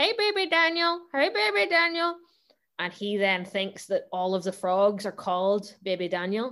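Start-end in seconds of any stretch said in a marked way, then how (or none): 0.0-2.2 tiny, very high-pitched, squeaky toy frog voice. Making toy frogs speak to baby Daniel; toy frog voice. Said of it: "I was doing the voice of them".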